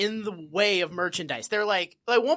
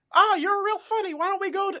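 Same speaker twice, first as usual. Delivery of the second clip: very high squeak, climbing higher and higher; 11 semitones higher than usual. Recapping an episode, the host quotes Barney's line, in a Barney Fife impression. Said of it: "Great Mickey Mouse".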